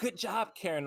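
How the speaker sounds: put-on, high-pitched, shouted call-out. Retelling what a driver shouted from a car: imitating someone yelling. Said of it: "she's yelling at her".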